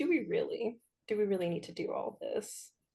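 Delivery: coy, soft, coquettish, flirtatious coaxing tone. Acting out a character's flirting in a game scene: flirtatious. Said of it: "I bat my eyelashes, I do a little hair flip".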